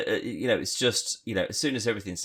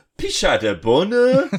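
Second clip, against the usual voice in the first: put-on gibberish game voice, much higher, louder; 11 semitones higher, 9 dB louder than usual. Describing a kid inside The Sims, the speaker mimics the Sims: Sims character voice. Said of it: "That's a really good Sim voice".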